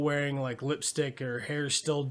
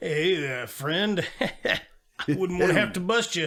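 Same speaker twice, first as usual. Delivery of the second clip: put-on friendly sheriff voice, higher pitch; 3 semitones higher than usual. Retelling how the sheriff in the movie talks to Jerry: imitating a friendly sheriff. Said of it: "Friendly sheriff".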